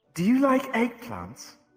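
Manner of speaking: high, loud talking plant voice. Voicing a talking plant introducing itself: Hope the plant's voice. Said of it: "Her voice".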